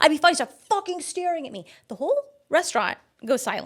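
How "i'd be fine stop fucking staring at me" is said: furious angry yell, pitched up high. Retelling a date snapping at a nearby table: imitating someone yelling angrily. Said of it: "He's like".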